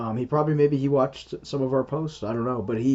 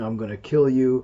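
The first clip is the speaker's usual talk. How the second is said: put-on gruff growling demon voice. A scam baiter retells what a scammer said to him, gruff demon growl. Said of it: "It was a gruff growling".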